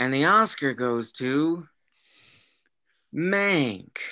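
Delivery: very slow put-on voice, words drawn out. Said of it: "my best Jack Nicholson voice".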